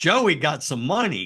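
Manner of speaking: mock sudden, high, excited shout. Recounting what a man shouted about a football coach: retelling a shout. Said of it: "And he shouts".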